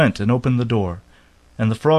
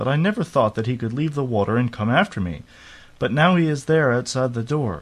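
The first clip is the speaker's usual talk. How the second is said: usual speaking voice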